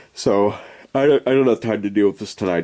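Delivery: yawning while talking. Exhausted speaker putting off a fix until tomorrow night, yawning while talking. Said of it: "You can hear I'm yawning".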